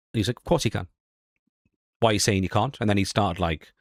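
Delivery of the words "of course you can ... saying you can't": testy, dismissive, irritated and pissy delivery. Retelling a big streamer's reply after being told no: imitating someone getting pissy. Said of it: "he got really pissy".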